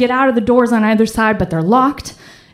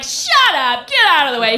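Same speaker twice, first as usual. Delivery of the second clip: put-on New York street accent; 4 semitones higher than usual. Retelling a subway passenger pushing through the crowd: loud New York accent. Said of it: "this loud New York accent bursts over".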